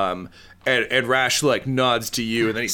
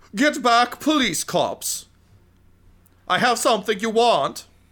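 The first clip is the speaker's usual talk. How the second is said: villain shout pitched very high; 12 semitones higher than usual. Voicing a villain turning back to the police: yelling villain. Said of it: "he turns back to you and he yells".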